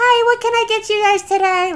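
put-on bright cheerful voice, very high. Retelling greeting customers at work while trying to seem happy: imitating her own cheerful work voice. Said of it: "that's literally what I sound like".

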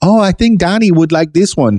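very high, put-on Cuban accent. Speaker quotes grandmother picking a guitar off the Home Shopping Network: mock Cuban accent. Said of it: "I am making fun of her accent".

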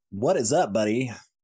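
goofy put-on announcer-style podcast host voice. Opening the podcast, the host greets the co-host in a podcast voice. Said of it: "It's our new podcast voice".

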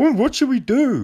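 high, mocking, helpless whine.

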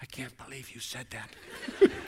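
soft, breathy, whispered undertone. Retelling what the wife said quietly beside the speaker: imitating someone muttering under breath. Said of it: "hear her say under her breath".

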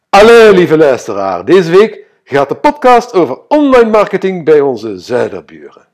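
poor, fake Flemish accent, high and loud. Podcast host greeting listeners, in a bad Flemish accent. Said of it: "sorry voor dat hele slechte Vlaamse accent".

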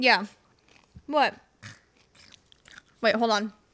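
chewing mid-sentence, mouth full. Chatting with another speaker while eating tortilla chips, talking while chewing. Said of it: "I'm eating if you heard that".

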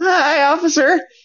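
put-on, jittery, nervous, very high voice. Retelling greeting a police officer while scared shitless, acting out being nervous. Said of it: "I'm just like all nervous".

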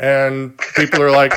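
ordinary talk, nothing marked

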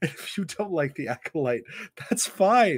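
put-on laughing delivery. Retelling a laughing line from a live stage: imitating Leslie Headland laughing while talking. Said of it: "I'll never forget the laugh that she did".

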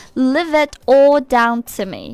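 slow careful linking of "leave it all".

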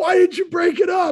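very high, shrill screaming. Hockey player retelling how the guy he fought screamed at the referee. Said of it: "he's screaming at the ref".

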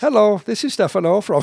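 put-on Indian accent at very high pitch. Imitating a coworker's voicemail greeting: imitating Stefano's Indian accent. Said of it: "he's got a freaking Indian accent when he talks".

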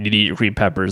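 put-on stern, strict, fast scolding tone. Retelling what you said to brooklyn when she wouldn't eat, retelling being strict. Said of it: "And I'm getting strict".

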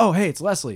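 mock thrilled, high, super-excited voice. Retelling a dream of meeting someone: imitating own super excited greeting. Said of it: "super excited".

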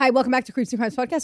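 very fast, rapid auctioneer-style speed-talk patter. Podcast host redoes the show's opening intro, fast auctioneer-style patter. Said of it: "I'm an auctioneer".

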